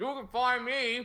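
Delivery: high voice, words pushed around chewed food. Asked where viewers can find them, the guest answers while talking with mouth full. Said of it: "Sorry, eating dinner as quickly as possible".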